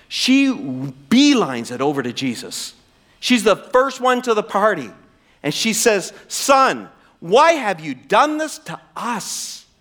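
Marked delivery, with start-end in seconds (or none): 6.3-9.6 frustrated, disappointed, emotional let-down tone. Acting out Mary finding her son in the temple: acting a mother's frustrated disappointment. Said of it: "it's dripping with emotion".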